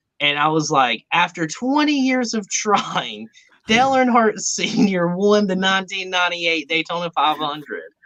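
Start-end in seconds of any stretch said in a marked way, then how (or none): 1.1-7.8 high-pitched, play-acted yelling. Retelling shouting back at a street preacher: retelling own yelling. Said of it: "I start yelling, too".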